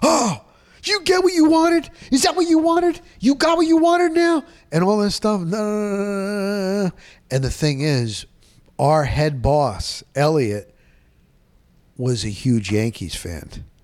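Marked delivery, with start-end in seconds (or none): 0.0-4.4 enraged, very high, furious screaming. Retelling how the broadcast was cut off: retelling a furious scream. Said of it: "I remember screaming".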